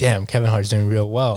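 usual speaking voice

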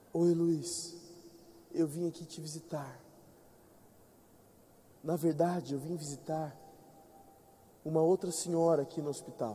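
soft, quiet speaking. Retelling a hospital visitor's greeting: imitating someone speaking softly. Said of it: "Falando baixinho".

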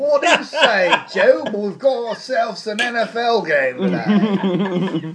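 high, slow, drawn-out fake British accent. Joking about an NFL game in London: put-on English accent. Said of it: "That's a really good English accent".

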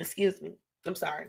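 quiet, choked-up, holding back tears.

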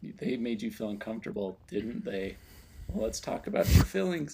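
put-on soft, lilting children's host voice. Imitating Palpatine with a Mister Rogers lilt. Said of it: "You do a pretty impressive impersonation".

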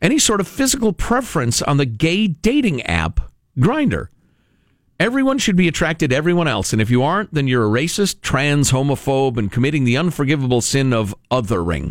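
normal talking voice

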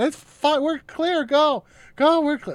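shrill, high, drawn-out scream. Recalling a ride home when the car stopped for an ambulance: retelling own screaming. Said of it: "I just kept screaming".

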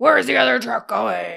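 very loud, harsh, rough bellow. Retelling a video of Batman on the subway: imitating Batman yelling. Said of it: "And yelling at people".

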